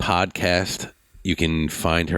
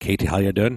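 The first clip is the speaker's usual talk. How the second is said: attempted put-on Irish accent with a lilt; 2 semitones higher than usual. Speaker asks how the accent sounds, then tries it out: Irish accent. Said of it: "How's my Irish accent?".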